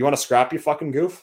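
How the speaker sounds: everyday natural accent, loud and high-pitched. Speaker repeating a meme line, this time in their own accent. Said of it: "I'll say it in my accent".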